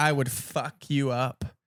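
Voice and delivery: slow, drawn-out, cocky tough talk full of swagger. Mocking a comic's online boast, cocky Jonah Hill impression. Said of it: "his voice, he's like".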